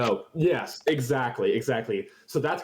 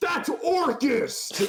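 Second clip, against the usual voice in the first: shrill, high-pitched alarmed scream. Voicing a passerby in the scene who screams at the couple: screaming. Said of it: "you hear a half worker scream".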